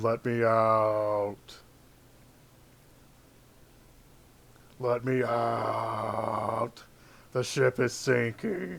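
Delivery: very slow, drawn-out growling dragon or beast voice.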